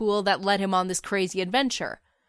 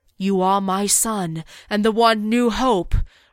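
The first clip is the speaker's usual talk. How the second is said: deep-voiced lion voice; 4 dB louder than usual. Narrating a story where a lion in the sky speaks to Luke, deep-voiced lion. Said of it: "the deep-voiced lion insists".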